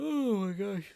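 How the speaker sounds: mid-yawn. Near the end of a long stream, the host apologizes, yawning. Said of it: "I'm yawning really hard".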